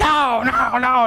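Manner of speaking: put-on high, furious raging scream. Retelling how he went into a rage in the classroom, imitating someone screaming. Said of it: "he's screaming and yelling and everything".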